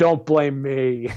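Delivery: acted-out, bone-dry, totally flat deadpan. Acting out the reply of the man who drew your first comic, retelling a deadpan reply. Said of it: "totally deadpan goes".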